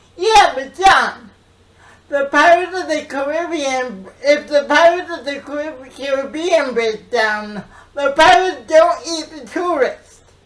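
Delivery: very loud, exasperated, frustrated sarcastic retort. Showing a line for a casting read: sarcastic and frustrated. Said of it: "you're very frustrated and sarcastic".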